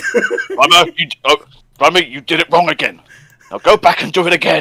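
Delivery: play-acted furious, deliberate, loud, swooping angry voice. Imagining Robotnik scolding his henchman: angry Robotnik voice. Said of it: "Robotnik would have been angry at Grimer".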